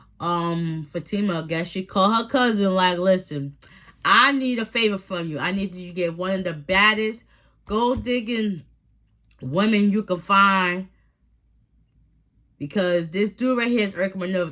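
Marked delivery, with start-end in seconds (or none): none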